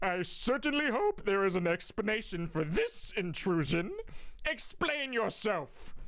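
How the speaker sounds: deep, dropped, put-on character voice. Voicing a nobleman demanding an explanation: deep Lemon voice. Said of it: "So what if I do deep Lemon?".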